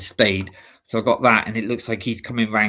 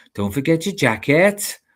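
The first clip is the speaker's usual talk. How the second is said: Welsh accent, pitched up; 6 semitones higher than usual. Showing a saying used to get into the accent: Welsh accent. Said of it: "sometimes it's quite hard to just go into the accent".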